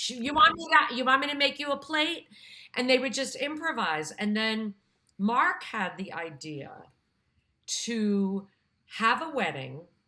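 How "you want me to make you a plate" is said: put-on Queens accent, higher, louder, slower. Retelling college friends' improv as a Queens Italian couple, Queens Italian-American accent. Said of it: "as if they were this Queens Italian couple".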